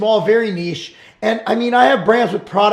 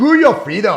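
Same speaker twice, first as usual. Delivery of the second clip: bad, exaggerated, clumsy Austrian accent. Quoting what Arnold said, in a bad Arnold accent. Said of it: "That was the worst Arnold accent ever".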